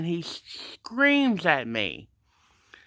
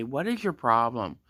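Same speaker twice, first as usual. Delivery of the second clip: ordinary talk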